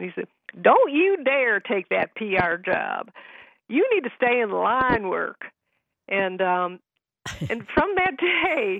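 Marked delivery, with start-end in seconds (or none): 0.6-5.5 swooping put-on Texas accent. Recalling advice given when speaker was 25, quoting him in a Texas accent. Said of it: "he had this Texas accent".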